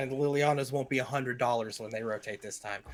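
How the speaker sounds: ordinary talk, nothing marked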